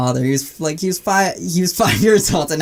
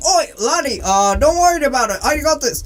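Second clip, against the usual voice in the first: put-on Scottish accent, high pitch; 8 semitones higher than usual. Telling a story, quoting the Scotsman speaking to the other man, Scottish accent. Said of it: "the European Scotsman turns to him and is like".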